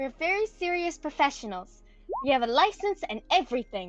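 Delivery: dead serious, no-nonsense, very serious tone. Narrating a character leaning close to speak to Bill, very serious voice. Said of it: "she's just gonna say in a very serious voice".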